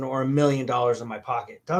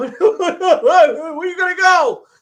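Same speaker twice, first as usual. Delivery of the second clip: put-on shrill, very high, loud sobbing stammer; 10 dB louder than usual. Retelling asking a dad where he is going: retelling own tearful question. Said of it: "I'm bawling my eyes out".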